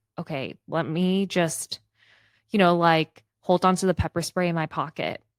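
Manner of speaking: ordinary talk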